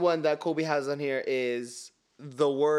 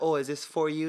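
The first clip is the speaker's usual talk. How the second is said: normal talking voice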